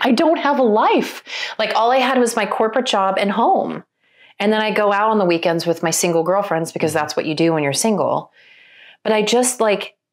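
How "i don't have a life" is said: sudden, high, gasping tone of realization. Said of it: "I was like".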